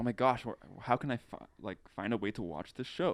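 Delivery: normal talking voice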